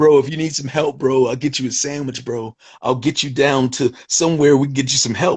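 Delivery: laid-back beach-bro surfer dude voice. Retelling how a man's voice changes as he answers; surfer voice. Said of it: "His voice changes like to like a surfer".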